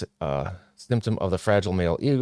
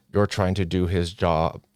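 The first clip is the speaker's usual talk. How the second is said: plain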